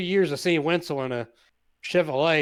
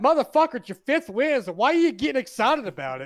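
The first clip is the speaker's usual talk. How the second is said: put-on angry, exasperated, pissed-off rant, pitched up; 9 semitones higher than usual. Retelling what Travis said after a race win: imitating Travis pissed off. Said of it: "Travis gets pissed about it too".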